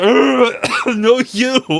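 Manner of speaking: very high frustrated cry. Retelling a cartoon scene, quoting the villain: General Grievous voice. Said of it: "just goes".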